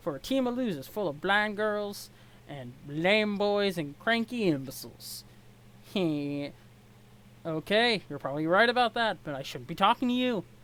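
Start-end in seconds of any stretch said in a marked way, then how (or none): 0.0-5.2 really bad, crappy put-on Southern accent. Reader voices a male character in a scene: really bad southern accent. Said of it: "giving him a really crappy Southern accent".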